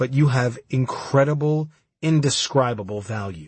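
plain reading voice

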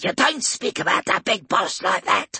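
high hissing orc voice, words hissed out. Reading a story, the orc holds a blade to Polixis's throat, in a hissing orc voice. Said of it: "it hissed".

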